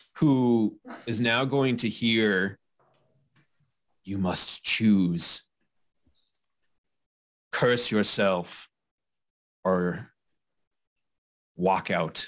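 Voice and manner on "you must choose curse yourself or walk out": low, ominous, foreboding, doom-laden voice. Storyteller voicing an unseen voice that gives a character a choice, ominous voice. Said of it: "ominous voice?".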